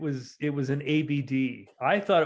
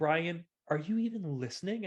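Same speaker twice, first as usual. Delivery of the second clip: snide, sneering, mock-irritated tone; 4 semitones higher, 5 dB quieter than usual. Retelling what the other speaker said to Brian: imitating Dave's snide tone. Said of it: "you say it with that snide".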